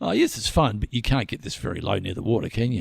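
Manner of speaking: mock haughty, arrogant, daring, goading tone. Retelling what he said to the guy in the chopper over Port Phillip Bay: mock-arrogant tone. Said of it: "sort of arrogantly".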